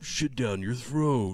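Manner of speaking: tough video game action hero voice. Comparing game voices, doing a Duke Nukem line: Duke Nukem voice. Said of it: "like a fucking Duke Nukem".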